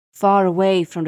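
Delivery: ordinary delivery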